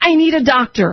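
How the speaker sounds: mock desperate, urgent, mild half-shouted yell. Recounting falling back into a locked cell: retelling own screaming. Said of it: "I'm screaming".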